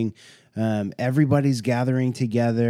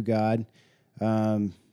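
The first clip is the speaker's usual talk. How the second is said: ordinary talk, nothing marked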